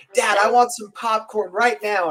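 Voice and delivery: put-on screaming child voice. Retelling a kid at the theater demanding popcorn: imitating a kid screaming. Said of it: "this kid all of a sudden screamed to his dad".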